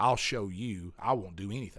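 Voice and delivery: ordinary talk, nothing marked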